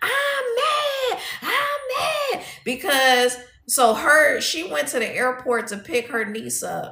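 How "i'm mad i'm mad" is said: put-on very high, very slow, drawn-out toddler tantrum wail. Retelling a woman screaming in her car, imitating toddler-like tantrum screaming. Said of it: "She was in the car screaming".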